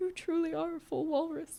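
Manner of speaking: put-on tearful, wistful voice, soft and high. Retelling a dying Howard's words, mock-wistful and tearful. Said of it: "wistfully looking up at the ceiling. He has like tears in his eyes".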